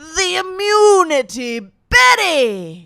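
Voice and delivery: very high, swooping cartoon voice, drawn out. Doing cartoon character impressions, doing a President Fungus impression. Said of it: "President Fungus. He goes".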